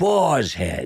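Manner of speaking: put-on announcer voice, New York accent. Recalling a well-known ad announcer's voice, doing Boar's Head announcer, New York accent. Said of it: "the New York accent would give him away".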